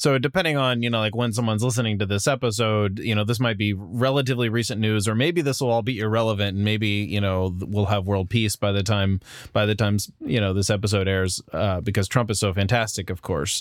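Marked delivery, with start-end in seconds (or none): none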